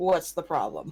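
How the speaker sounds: irritated, fed-up, frustrated, annoyed tone. Asking in character what the problem is: frustrated. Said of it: "look frustrated and go".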